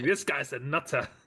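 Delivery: small, held-back, screechy jeering goblin cry. The narrator voices goblins screaming about Ingryr, in a screaming goblin voice. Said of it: "and they're screaming".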